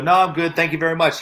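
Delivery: plain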